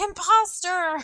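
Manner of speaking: in-character, shrill, loud, high accusing yell. Yelling an accusation at a fake ally in a fight: yelling in character. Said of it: "I'm gonna yell and be like".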